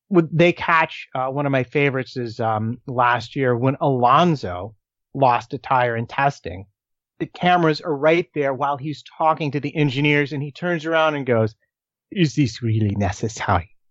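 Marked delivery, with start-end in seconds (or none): 12.1-13.6 put-on dropping low into a French accent. Retelling how a driver who lost a tire turned to the cameras, an Alonso impression in a French accent. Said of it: "a good French accent".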